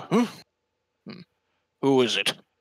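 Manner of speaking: startled, caught-off-guard, high, swooping voice. Game master voicing someone behind a knocked-on door, in a startled voice. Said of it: "you hear a startled voice go".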